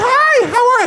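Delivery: very high, overly polite customer service voice. Describing what happens when someone pulls a gun, in a polite customer service voice. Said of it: "I get like customer service voice".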